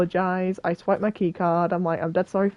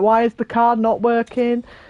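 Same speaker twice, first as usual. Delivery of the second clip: panicked, frantic, flustered, freaking-out outburst; 4 semitones higher, 4 dB louder than usual. Retelling being locked out of a university building, acting out freaking out. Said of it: "I'm freaking out".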